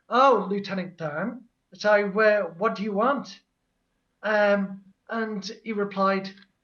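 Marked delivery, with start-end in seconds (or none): 0.1-3.4 put-on sarcastic tone. Retelling own reply to a text message: retelling a sarcastic reply. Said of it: "sarcastically replied".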